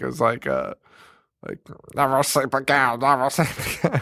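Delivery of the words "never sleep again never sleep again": loose, rough put-on cartoon duck voice. Retelling a seizing kid's line in a movie: imitating a Donald Duck-like voice. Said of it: "I don't know how to do Donald Duck".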